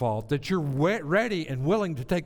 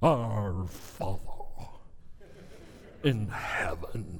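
put-on preacher voice, hushed, whispered and breathy; 8 semitones lower, 6 dB quieter than usual. Speaker mocks how preachers get up and put on airs, in an affected preacher voice. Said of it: "they get into a preacher voice".

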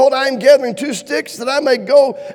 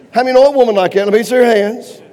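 plain

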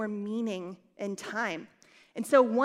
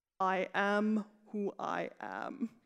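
very slow, soft, measured delivery; 3 semitones lower, 5 dB quieter than usual. Reading aloud God's reply to Moses, in a God voice. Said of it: "It's my God voice".

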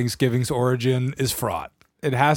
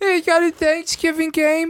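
very high-pitched put-on persona voice.

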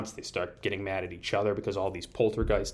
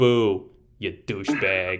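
tough-guy Italian ghost voice, much louder; 6 dB louder than usual. Pitching a horror movie scene, the speaker voices a ghost in a put-on Guido Italian voice. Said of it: "big sort of like Guido Italian standing there".

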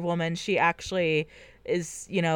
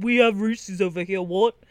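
mock angry voice, British accent. Imitating angry British listeners complaining: imitating angry British people. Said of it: "angry British people being like".

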